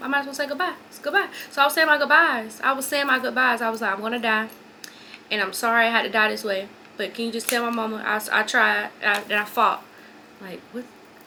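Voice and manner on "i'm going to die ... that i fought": ordinary delivery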